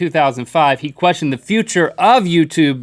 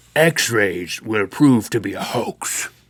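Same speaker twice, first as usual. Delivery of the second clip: gruff put-on voice, much lower and quieter; 6 semitones lower, 4 dB quieter than usual. Quoting a scientist's confident 1895 statement, in a gruff put-on voice.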